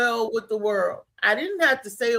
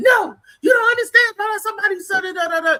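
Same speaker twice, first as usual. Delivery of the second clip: frantic, pitched-up, frenzied spazzing-out outburst; 9 semitones higher, 5 dB louder than usual. Retelling how the speaker's girl went at everybody in a bar: imitating her spazzing out. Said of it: "She was going at everybody".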